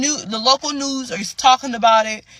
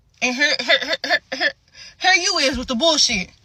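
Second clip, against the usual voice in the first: stuttering, getting stuck on the word "here"; 4 semitones higher than usual. Ranting about a police brutality story: stuttering. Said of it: "Got me stuttering".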